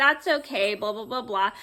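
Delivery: normal talking voice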